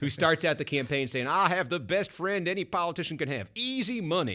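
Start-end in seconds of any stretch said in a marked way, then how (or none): 1.3-4.4 bad Southern accent, lifted to a higher pitch. Quoting a conservative challenger's campaign line: bad Southern accent as Phil Gramm. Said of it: "That's my southern accent".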